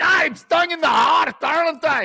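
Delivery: very high, slow cry in mock Scottish accent. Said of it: "If I was Scottish, I'd be like".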